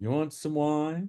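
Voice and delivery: casual, high-pitched tone. Retelling being offered wine in the studio: imitating Marshall. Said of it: "that's a great impression".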